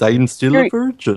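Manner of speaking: bad put-on Indian accent, almost Canadian. Mocking a figure skater cast in a movie: bad Indian accent. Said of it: "That was a bad Indian accent".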